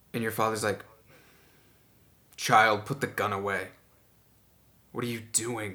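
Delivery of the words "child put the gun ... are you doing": stern, displeased, disapproving father voice. Voicing the father ordering his daughter to put the gun away: stern, displeased father. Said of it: "not pleased".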